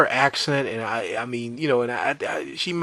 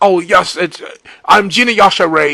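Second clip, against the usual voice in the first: put-on thick, laid-on British accent, loud and high; 7 semitones higher, 8 dB louder than usual. Describing a comedian's accent, then imitating it: imitating Gina Yashere's thick British accent. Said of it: "I can't do it like her".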